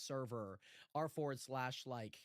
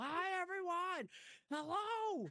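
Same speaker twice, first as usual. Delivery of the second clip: full-on loud shout, pitched high. Just introduced, the server owner greets everyone, yelling. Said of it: "sounds cooler if I yell".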